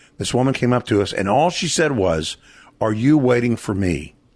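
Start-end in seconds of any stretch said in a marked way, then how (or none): none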